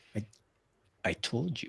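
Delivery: very quiet, forced out through clenched teeth. A character answers a man who is pressing him, through gritted teeth. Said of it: "he through gritted teeth".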